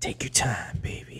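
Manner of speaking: soft, hushed whisper under the breath. Whispering to Matilda in character while letting a seed grow: whispering. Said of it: "whisper to Matilda".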